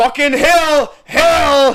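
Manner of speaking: loud, high yell with "hill" drawn out. Retelling yelling a warning to a friend going downhill: imitating own warning yell. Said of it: "So I yelled to him".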